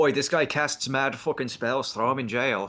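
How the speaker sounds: put-on Irish accent. Voicing another person's reaction to a guy who casts spells; Irish accent. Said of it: "Why am I fucking Irish?".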